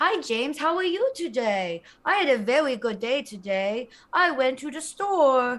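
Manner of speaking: put-on baby talk voice, like a little baby. Showing the others an idea where everyone talks like babies: talking like a baby. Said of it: "But we all talk like this to each other".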